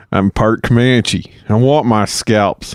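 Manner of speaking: put-on Tennessee drawl. Quoting a character to another speaker while asking about his accent, Aldo Raine Tennessee accent. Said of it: "Tennessee accent?".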